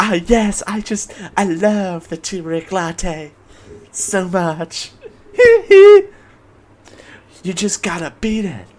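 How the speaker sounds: put-on soft whispering voice. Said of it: "[name]'s voice is literally just me whispering".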